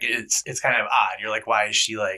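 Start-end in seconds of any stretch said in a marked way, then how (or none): none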